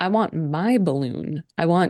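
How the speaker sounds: creepy monotone put-on voice. Acting out Charlie being pissed off, in Charlie's deadpan creepy voice. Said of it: "he's just like very deadpan and".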